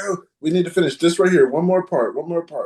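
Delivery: mock irritated, pushy tone. Retelling what an angry man said when leaving: imitating an angry man. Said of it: "he was just so angry".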